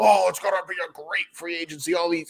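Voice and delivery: mock sarcastic hype. Mocking what the media says every year about free agency: mocking imitation of the media. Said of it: "I'm mocking the media".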